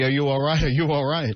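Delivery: plain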